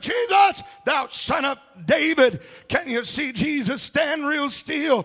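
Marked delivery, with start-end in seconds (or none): 0.0-2.4 put-on, screamed loud cry out. Retelling a blind man calling out to jesus: imitating a blind man screaming. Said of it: "that blind man started screaming".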